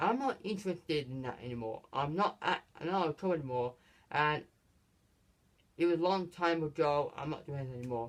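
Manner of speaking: usual speaking voice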